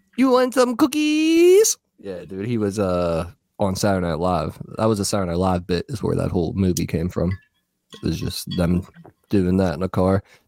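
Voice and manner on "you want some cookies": very high pitch, very slow, drawn-out delivery. Quoting a movie character's line about cookies: Corky Romano voice. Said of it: "he had that line where he".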